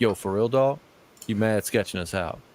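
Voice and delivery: fake-tough, wannabe-thug teenager slang voice. Retelling what a teenage kid in the car said: imitating a fake-thug teen kid. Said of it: "that's how they talked".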